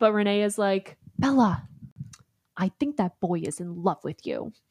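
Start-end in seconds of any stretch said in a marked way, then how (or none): 1.2-4.5 pointed, accusing, accusatory tone. Retelling what Renee says to Bella: accusatory Renee impression. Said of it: "She's very accusatory".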